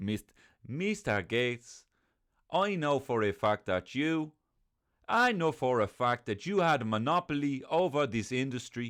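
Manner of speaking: French accent with a Dublin twang. Speaker addressing Mister Gates in a French Dublin character accent. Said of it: "my French Dublin character".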